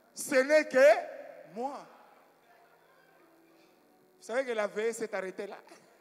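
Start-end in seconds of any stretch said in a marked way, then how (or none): 0.2-1.9 loud, slow, booming messianic proclamation. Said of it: "j'ai pris une voix messianique".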